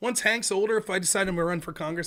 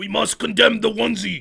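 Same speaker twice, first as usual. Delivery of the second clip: loud, raspy delivery; 8 dB louder than usual. Doing a Bernie impression that keeps getting worse: Bernie impression. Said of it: "My Bernie impression gets worse".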